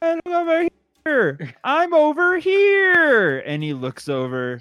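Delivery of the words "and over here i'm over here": very high, very slow, loud, drawn-out calling voice. Voicing a character who claps to lure a worm: loud call for attention. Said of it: "Spectre claps his hands really loud, going".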